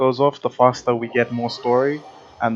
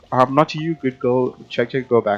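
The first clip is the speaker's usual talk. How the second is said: ordinary delivery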